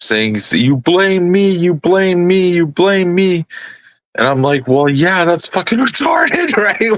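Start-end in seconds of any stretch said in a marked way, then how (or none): 0.5-3.5 put-on crying, high hysterical shrieks, repeated. Retelling how she reacted after the bird's funeral; imitating hysterical screaming.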